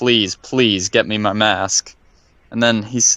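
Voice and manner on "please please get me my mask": put-on begging, pleading. Retelling what a game character says to the player: imitating begging. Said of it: "then he starts begging you to get his mask".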